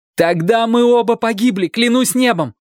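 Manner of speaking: cried out, shrill and very high-pitched shout. Shelton, told she has no strength, shouts at her; shouting, stamping his foot. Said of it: "крикнул он, топнув ногой".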